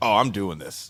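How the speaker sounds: plain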